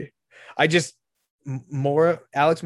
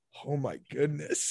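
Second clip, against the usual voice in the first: mock mutter under breath, quieter; 8 dB quieter than usual. Telling a story, quoting a friend's remark, retelling a mutter under breath. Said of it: "just says under his breath".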